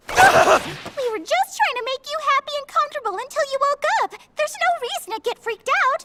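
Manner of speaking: way up high, loud put-on voice. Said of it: "stop talking in that high voice!".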